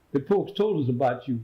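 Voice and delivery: normal talking voice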